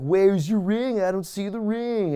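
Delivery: hammy, overplayed, laid on thick every word. Retelling a wrestling match taunt: imitating Brian Kendrick hamming it up. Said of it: "Brian is totally, you know, hamming it up".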